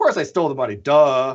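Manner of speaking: put-on offhand, dismissive, flippant sarcasm. Acting out a sarcastic man trying to get out of it: mock-sarcastic, flippant. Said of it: "he's very sarcastic, right? So he's like".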